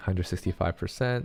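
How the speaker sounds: usual speaking voice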